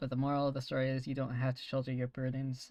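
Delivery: ordinary delivery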